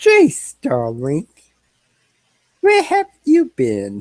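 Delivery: put-on friendly, high, swooping young woman's voice calling out. A narrator voices a woman calling out to a player's character, in a female voice. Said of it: "you hear a female voice".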